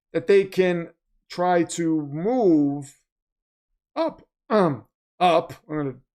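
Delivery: drawn-out voice, breaking and cracking. Speaker discussing the Jets' second-round picks, voice cracking. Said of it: "my voice is cracking".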